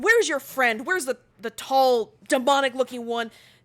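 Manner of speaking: loud, angry, confrontational tone. Voicing a dryad who approaches, looking angry: angry dryad. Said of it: "looking like she's angry".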